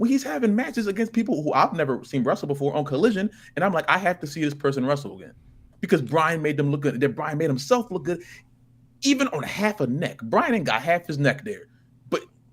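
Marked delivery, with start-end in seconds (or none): none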